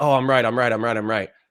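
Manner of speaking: mocking, insistent argumentative tone. Retelling a debate, imitating an opponent who kept asserting he was right. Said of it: "he just kept asserting like".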